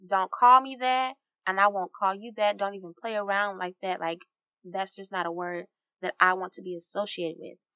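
normal talking voice

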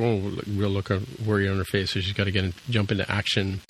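ordinary talk

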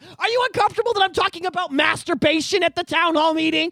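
mock, half-hearted, mild shouting. Retelling a parent at a school board meeting: imitating a woman yelling. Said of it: "She's yelling at them".

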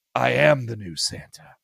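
slow, creaky, drawn-out, dark and menacing voice. Retelling a cartoon scene where Sonic becomes Santa: imitating Sonic, malevolent. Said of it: "Sonic turns with this weird, malevolent thought".

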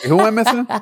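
high, baffled, clueless cop voice. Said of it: "They'd be like".

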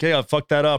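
normal talking voice

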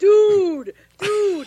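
high, loud, panicked shout.

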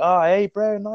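put-on high, friendly Island boy voice. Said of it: "they're just like".

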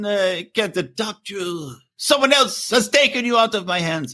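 high, slow, bad fake Swiss accent. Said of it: "That's not a Swiss accent".

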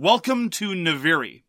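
very stentorian, booming announcer-style voice. Recreating the other person's opening of a board game, in a very stentorian voice. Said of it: "in a very stentorious voice".

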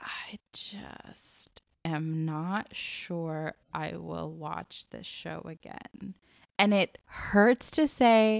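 very slow, reluctant, pained delivery. Admitting reluctantly you won't rewatch a show: speaking quietly. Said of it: "I'm trying to say it quietly".

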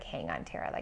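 calming, self-soothing tone. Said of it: "restructure that thought and be like".

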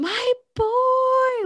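put-on high-pitched screamed cheer with "boy" drawn out. Recounting a man's logo popping up on screen, retelling a loud scream. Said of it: "I screamed".

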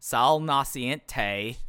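put-on Southern accent. Mimicking how he keeps saying a name, in a weird Cleveland/Southern accent. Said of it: "he says it like with like the weirdest Cleveland/Southern accent ever".

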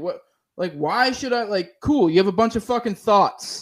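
ordinary talk, nothing marked

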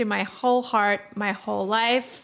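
ordinary talk, nothing marked

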